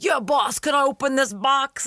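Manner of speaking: put-on New York accent, very high. Imitating a goon from the episode asking his boss: imitating a New York accent. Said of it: "The accent also comes again when he's like".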